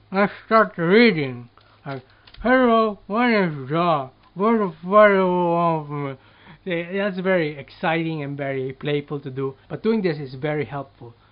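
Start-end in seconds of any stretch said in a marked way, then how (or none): 2.5-6.2 mouth full, much louder, slower. Demonstrating a reading exercise for learners: talking with something in mouth. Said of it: "Put something in your mouth".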